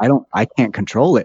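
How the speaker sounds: usual speaking voice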